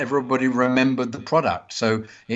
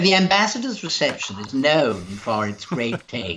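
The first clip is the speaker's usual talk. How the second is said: daft, silly, completely stupid ad-read voice. Retelling a commercial voiceover done in a completely stupid voice. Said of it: "I did it in a voice like that".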